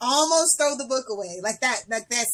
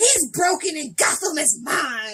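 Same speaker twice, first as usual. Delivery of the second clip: furious villain delivery; 4 semitones higher than usual. Quoting Bane in a comic, imitating a mad Bane. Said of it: "He's all mad".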